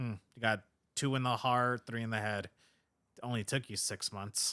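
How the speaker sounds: snide, passive-aggressive, backhanded tone. Retelling a character's line to another speaker: imitating a passive-aggressive tone. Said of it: "he says it very passive aggressively".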